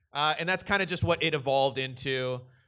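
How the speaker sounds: ordinary delivery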